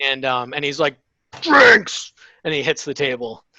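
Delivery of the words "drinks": very high, loud, rowdy shout. Voicing a character who hits the table demanding drinks: shouting. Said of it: "keep the volume down".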